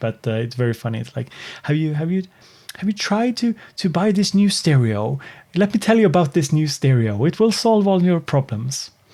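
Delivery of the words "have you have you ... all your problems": Swedish accent in English, pitched up. Showing the funny accent they say they can't do: Swedish accent in English. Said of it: "the Swedish accent in English".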